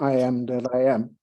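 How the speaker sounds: normal talking voice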